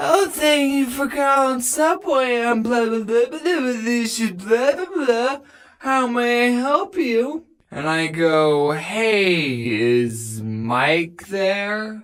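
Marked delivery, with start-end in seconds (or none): 0.0-7.4 high, rushed, rattled-off mocking stupid voice. Retelling how someone answered the phone at the other store, in a mocking stupid voice. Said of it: "with their stupid voice".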